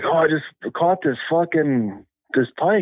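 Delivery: mock hollering, high, drawn-out yell. Retelling a man's answer after he woke the speaker, imitating him yelling. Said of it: "He's yelling at me and shit".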